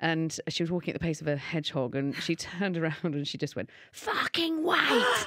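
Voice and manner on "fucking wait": very high-pitched East End barmaid voice. Retelling how a slow-walking woman turned around and spoke to you, in an East End barmaid voice. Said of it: "like the voice of an East End barmaid".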